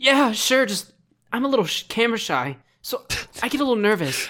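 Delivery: very high-pitched anime hero voice. Retelling a cosplayer answering a photo request: Deku voice. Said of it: "How can you do that so well?".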